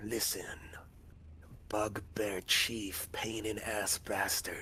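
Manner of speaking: hushed put-on goblin voice, leaning in close. Game narrator voicing a goblin who comes in close to the players, goblin voice. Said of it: "he comes in close and says".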